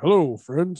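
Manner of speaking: put-on play-by-play announcer voice. Describing the play-by-play voice he lacks: Jim Nantz impression. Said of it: "Jim Nantz".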